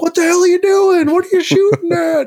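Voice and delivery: full-on high, shrill screaming yell. Retelling a video where a fisherman yells at kids: imitating a man screaming. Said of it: "screaming at these kids offshore".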